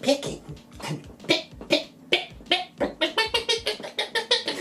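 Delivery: put-on whispered little baby chick pecking sounds. Asked what they would do in their free time as a baby chick, doing a baby chick impression. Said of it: "That's my baby chick impression".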